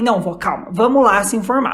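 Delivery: ordinary delivery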